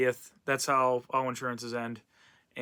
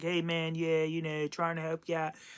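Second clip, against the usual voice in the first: put-on Pittsburgh accent, quieter; 4 semitones higher, 6 dB quieter than usual. Retelling what a man said on a phone call, imitating a Pittsburgh accent. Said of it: "his Pittsburgh accent".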